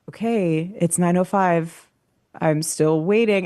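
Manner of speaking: ordinary delivery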